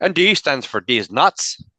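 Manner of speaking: slow, drawn-out, put-on Scottish accent. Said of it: "'cause he's Scottish, right?".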